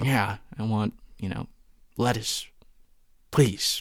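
aggressive under-the-breath muttering. Speaker reenacts ordering food while mad, retelling an aggressive mutter. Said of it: "Like really aggressively, just, you know, under my breath".

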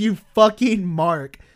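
mock, toned-down, mild shout. Retelling a promo's closing line said into the camera: imitating a yell. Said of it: "and just yells".

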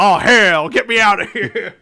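super thick, very loud, drawn-out put-on Southern drawl. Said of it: "super Southern".

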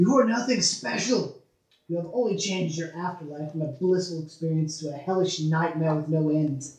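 loud hollering, yelled out. Narrating a tabletop game for the players, voicing Gentleman Death yelling out. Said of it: "You hear Gentleman Death yelling out".

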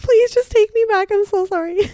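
fake teary sobbing, high-pitched pleading. Likening a plea to the audience to begging an ex: mock crying and begging. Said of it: "you're like crying and begging for your ex".

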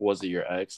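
usual speaking voice

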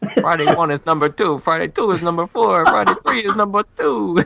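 high-pitched Italian wise-guy gangster accent. Ranking Fridays in different spots as a bit, gangster accent. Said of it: "he's giving you a gangster accent there".

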